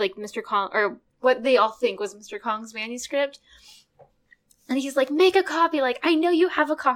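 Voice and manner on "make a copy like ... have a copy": put-on flustered shout, high-pitched. Retelling a scene where Mister Bong yells at Hadeen: imitating Mister Bong yelling. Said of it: "yelling at Hadeen".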